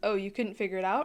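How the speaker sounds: ordinary delivery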